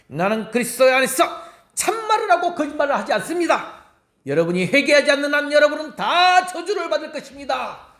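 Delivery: fired-up revival-style preaching, high and fiery. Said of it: "제가 화이트필드 목사님 아닌데 이렇게 하여튼 흉내를 냈다".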